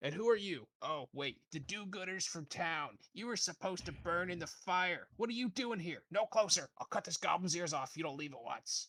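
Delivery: high, loud, crazed, unhinged screaming. Narrator voicing Calmont as the party walks up: screaming threats. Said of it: "He's screaming and threatening the goblins".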